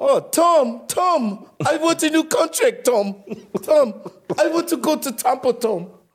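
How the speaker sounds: very high-pitched put-on woman's voice. Told to go ahead and do it, speak to Tom in a Gisele impersonation. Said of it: "do your Giselle impersonation".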